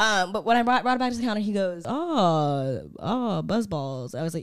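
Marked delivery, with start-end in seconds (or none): 1.8-4.1 very slow, low cashier voice, long stretched "oh". Retelling what the guy at the register said: imitating the register guy. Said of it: "That's a good impression of him".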